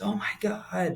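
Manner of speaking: high, all-out, top-of-the-lungs scream. Retelling a near accident as a child: imitating a scream at top of lungs. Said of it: "screamed at the top of his lungs".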